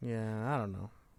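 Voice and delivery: dejected-sounding voice. Replying to the other speaker, sounding down. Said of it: "Why do you sound so down?".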